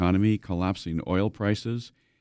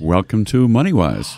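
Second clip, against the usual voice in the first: deep, low voice, louder; 7 dB louder than usual. Welcoming the co-host and the listeners: deep voice. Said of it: "It's nice and deep".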